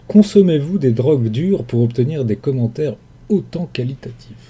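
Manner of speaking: ordinary talk, nothing marked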